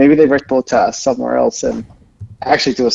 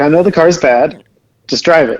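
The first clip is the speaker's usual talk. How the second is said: normal talking voice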